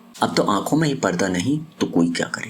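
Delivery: ordinary delivery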